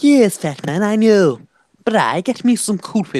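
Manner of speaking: high, loud, put-on cartoon voice. Showing off a Family Guy impression, in a Stewie voice. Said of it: "I can do Stewie from Family Guy".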